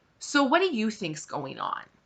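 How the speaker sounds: put-on calm, cool, superior, arrogant tone. Retelling how a resident questioned the speaker in pain, mimicking a calm, arrogant tone. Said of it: "very calmly, very arrogantly said".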